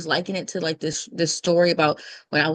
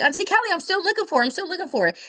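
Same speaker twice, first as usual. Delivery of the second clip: put-on very high, joyful, cheerful little girl's call; 13 semitones higher than usual. Retelling Camille yelling back downstairs to Auntie Kelly, imitating Camille's cheerful voice. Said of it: "this little cheerful, joyful voice".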